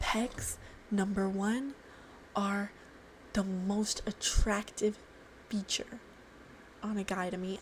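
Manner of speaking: very quiet, secretive whisper, barely audible. Admitting which muscle group is most attractive: whispering. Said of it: "I need to whisper this".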